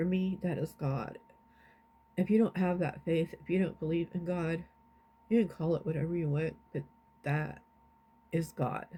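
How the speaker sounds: tearful, weeping, crying through the words. Sharing a praise report with a chat, the speaker talks through tears: crying while speaking. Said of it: "I'm crying because that's God".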